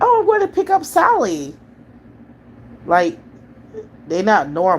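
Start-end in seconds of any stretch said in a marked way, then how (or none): 0.0-1.5 very high, sing-song, overly chipper cartoon voice. Mocking how certain people talk, speaker imitates them in a mock extra-chipper cartoon voice. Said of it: "they extra chipper in a way where it's weird".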